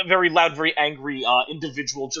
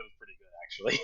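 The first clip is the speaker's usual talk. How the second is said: hushed, barely voiced whisper under the breath; 7 semitones lower, 14 dB quieter than usual. Voicing a character's reaction to a head slammed into a wall: whispering under her breath. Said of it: "whispers under her breath".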